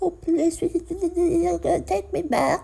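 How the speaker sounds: put-on very high, very slow, dumb childish voice. Mocking how the other speaker sounded when talking to her: imitating a dumb child. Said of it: "you sounded like a dumb child".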